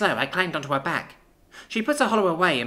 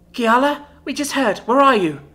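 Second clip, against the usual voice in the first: frantic, alarmed, raised, pitched-up voice; 6 semitones higher, 8 dB louder than usual. Reading a story: a mother calls her daughter after hearing news, panicked voice. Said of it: "my mum's panicked voice".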